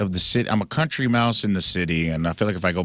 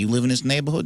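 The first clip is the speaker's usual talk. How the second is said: put-on Italian accent with the pitch raised; 5 semitones higher than usual. Retelling how neighborhood security guys question people: imitating an Italian security guy. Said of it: "a bunch of Italian guys driving around in Chevy Tahoes being like".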